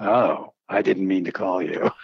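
mock masculine voice. Retelling a call from a woman whose voice sounds like a dude, imitating her manly voice. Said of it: "She sounds like a dude".

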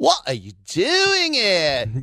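very high, sing-song, swooping British policewoman voice. Retelling how a woman police constable reacted on seeing the speaker, imitating her. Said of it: "You do her really well".

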